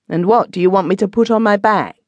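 openly impatient tone. A woman asks him what he wants her to put on, impatiently. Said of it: "said impatiently".

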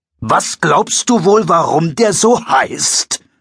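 sharpest cutting tone, slow and high-pitched. Narrating a school caretaker questioning Pfeffer at the teachers' entrance, very sharp. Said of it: "als der Schulwart mit einer Schachtel voll Papier herauskam. Der Schulwart bekam einen Mund so schmal wie ein Strich".

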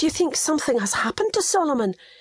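frightened, fearful voice, pitch climbing high. One woman asks another whether something has happened to a man, voice rising in fear. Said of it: "her voice rising in fear".

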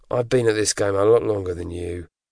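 plain reading voice

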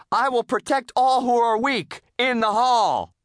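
loud, high-pitched, yelled-out shout. SpongeBob talks over Mrs. Puff in front of the class, shouting. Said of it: "SpongeBob shouted".

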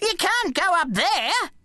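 shrill, very high-pitched shouting cry. Gramps calls out to the narrator, who has just challenged Apple Man; shouting. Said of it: "shouted Gramps".

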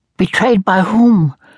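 very high, squeaky, rising voice. A boy answers a man who offers help, in a squeaky, high-pitched voice. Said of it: "the boy's voice squeaked, high-pitched".

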